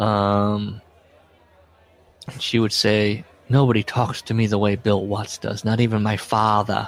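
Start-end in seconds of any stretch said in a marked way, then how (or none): 3.5-6.9 put-on thick Boston accent, faster. Retelling what the human resources woman would say, in Lisa Wolf's thick Boston accent. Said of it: "in her thick Boston accent".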